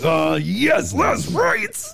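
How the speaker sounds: very high, very slow, drawn-out fake pleasure moan. Acting out someone getting pleasure from a news line: mock pleasure moan. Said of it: "Be like".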